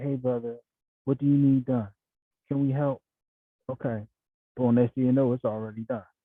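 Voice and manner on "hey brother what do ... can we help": mock sugary, sweet, eager-to-help tone. Imitating sisters offering help at a chaotic event: imitating a sweet voice. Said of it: "the sisters come right to you with a sweet voice".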